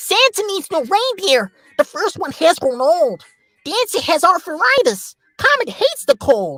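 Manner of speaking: very high, cute, bright, bouncy squeaky elf voice. Showing the voice used for Rudolph in a poem reading, elf-type voice for Rudolph. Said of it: "elf type voice".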